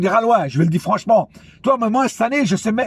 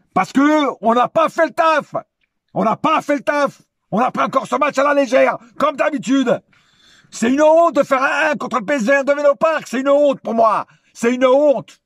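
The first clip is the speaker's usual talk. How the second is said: fed-up, furious, pitched-up angry tirade; 5 semitones higher than usual. Venting after a match his team did not take seriously: angry. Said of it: "je suis en colère là".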